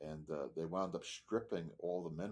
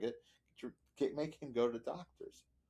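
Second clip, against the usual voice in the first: put-on scream, higher pitch; 7 semitones higher, 4 dB louder than usual. Retelling pleading with a mother about a doctor visit: imitating own screaming. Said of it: "I'm screaming at my mother".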